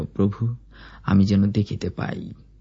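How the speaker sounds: usual speaking voice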